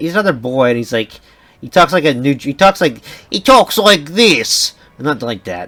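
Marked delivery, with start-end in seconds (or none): 3.3-5.7 slow, put-on Russian accent. Describing how a cartoon character talks, the speaker slips into an accidental russian accent. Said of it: "I don't know why I did Russia".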